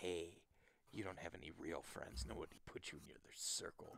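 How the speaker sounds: soft, tiny inner voice, nearly a whisper. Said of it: "the one tiny voice is like".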